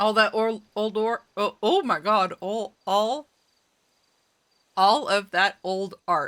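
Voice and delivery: garbled speech with mouth full. Speaker talks while eating, words garbled by a mouthful. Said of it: "It was hard to say with a mouthful".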